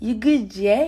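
put-on London accent. Repeating a London phrase after the other speaker: put-on London accent. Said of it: "No, that's London".

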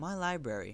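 proud, prideful delivery. Amanda Beale showing the books in her suitcase, proudly. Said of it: "Amanda Beale said proudly".

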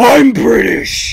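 loud, rough, barking tough-guy voice. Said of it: "he's gonna come to your house and be like".

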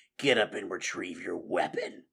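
growled words. Narrating a fight, the badger speaks to the fallen rat, growled. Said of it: "the badger growled".

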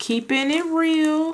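high-pitched, slow, drawn-out delivery.

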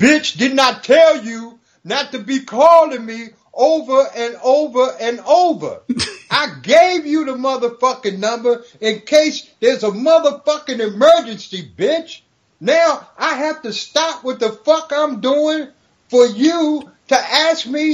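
furious, pissed-off, high-pitched male rant. Coming downstairs, the speaker retells a man on the phone, imitating a pissed-off man. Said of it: "voice of some brother that was pissed the fuck off".

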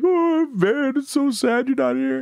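mock weepy grieving voice, high and slow. Retelling a movie scene of a man at a gravestone: imitating someone crying. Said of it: "he's just sitting on the ground crying".

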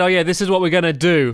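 ordinary talk

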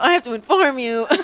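loud, high voice that cracks. Describing a battle droid informing Asajj Ventress of something, battle droid voice crack. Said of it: "it's hard to make your voice crack".

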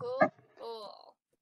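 dripping, mocking, heavily sarcastic cool tone. Reacting to hearing the platform lied about keeping kids safe: sarcastic. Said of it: "I say that in the most sarcastic way possible".

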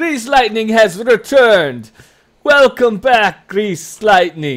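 roaring cheer, very loud and very high. Voicing tired camp men who cheer a returning wrestler: cheering camp men. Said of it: "they all start to cheer".

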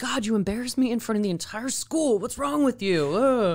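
mock exasperated outburst, dragging out "you". Recounting the scene where he flips out on her: mock flipping out. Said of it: "He kind of flips out on her".

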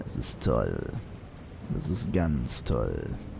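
low, slow, sarcastic mock cheer.

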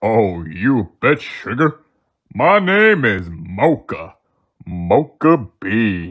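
deep, low character voice. A coffee bean answers when asked to reveal itself, in a deep Mocha Bean voice. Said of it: "Mocha has a deep voice".

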